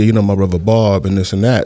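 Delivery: ordinary delivery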